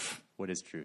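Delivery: acted, breathy, hushed, dismissive pfft scoff. Speaker retelling the Gospel scene, voicing Pilate's question to the Son of God: acting out Pilate's dismissive pfft. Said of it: "you can almost just hear the pfft in Pilate's voice".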